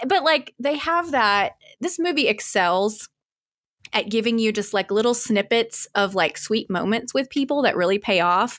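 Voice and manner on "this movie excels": normal talking voice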